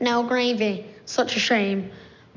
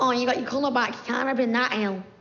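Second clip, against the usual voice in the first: mocking put-on fussing old granny voice; 4 semitones higher than usual. Told they sound like a granny, the speaker repeats their line in a mocking granny voice. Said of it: "It's a good voice".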